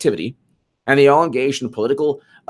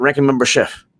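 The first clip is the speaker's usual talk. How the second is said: deliberately put-on, mumbled words. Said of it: "mumbles his words".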